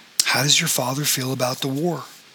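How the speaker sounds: plain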